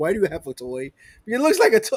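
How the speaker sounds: lively voice with swooping pitch. Imagining the wife questioning a toy purchase: imitating the wife. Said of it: "my wife like".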